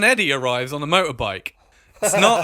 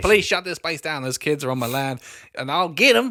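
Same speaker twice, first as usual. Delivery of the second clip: put-on Southern US accent. A speaker acts out locals demanding the police shut down the camp, Southern accent impression. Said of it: "They're real Southern for New Jersey".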